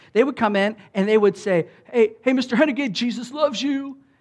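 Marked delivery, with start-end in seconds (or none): 1.9-4.0 put-on, high, pushy, obnoxious, in-your-face tone. Retelling how customers greeted the manager: imitating an obnoxious greeting. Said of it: "they were just really obnoxious with".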